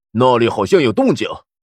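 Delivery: plain reading voice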